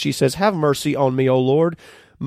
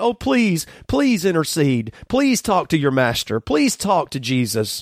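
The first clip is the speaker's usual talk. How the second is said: put-on desperate, begging cries; 2 semitones higher than usual. A speaker retelling a woman's plea to Jesus's disciples, acting out a woman crying out. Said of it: "She's crying after us".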